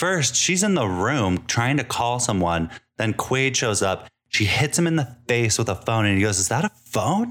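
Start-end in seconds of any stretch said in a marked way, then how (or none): 6.4-7.3 put-on, high, affronted, deeply insulted indignation. Retelling a scene where Quaid is hit in the face with a phone, mock-offended. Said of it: "He's like all offended".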